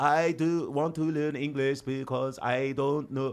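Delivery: imitated Vietnamese accent. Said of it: "like the Vietnamese".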